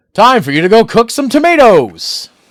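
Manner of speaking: generic booming announcer voice, very loud and high. Playing through a game, generic announcer voice. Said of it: "my generic announcer voice".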